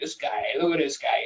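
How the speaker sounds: comic impression with an Italian accent.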